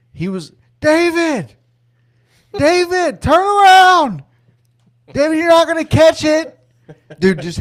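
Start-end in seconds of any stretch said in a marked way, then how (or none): 0.8-6.6 put-on high, loud heckling yell. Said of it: "heckling the fuck out of David".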